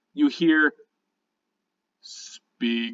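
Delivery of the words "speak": very deep, tinny, metallic whisper. A brass figure speaks after tapping the word courage, in a very deep, tinny voice. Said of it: "in a very deep, tinny voice".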